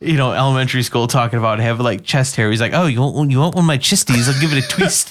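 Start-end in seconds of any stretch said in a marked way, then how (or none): 2.5-5.1 put-on New Zealand accent. Quoting an elementary school kid, in a New Zealand accent impression. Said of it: "fucking fantastic New Zealand impression".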